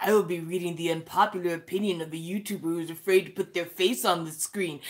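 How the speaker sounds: low, robotic British narrator voice. Starting to read out unpopular opinions, in a british robot narrator voice. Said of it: "British narrator robot voice".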